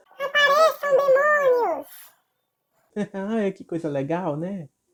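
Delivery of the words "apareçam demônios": high, loud taunting shout. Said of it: "Ele gritava assim".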